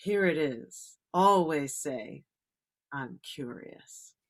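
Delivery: put-on graceful, elegant older lady's grandmotherly voice. Retelling advice from a professional speaker at a networking meeting: imitating an elegant older woman. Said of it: "elegance, elegance".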